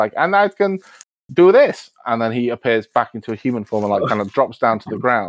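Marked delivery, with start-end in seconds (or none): 0.2-1.9 slow, high raven-like mimicking voice. A game narrator voices a raven re-saying what was just said, raven mimicking speech. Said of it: "he's gonna mimic".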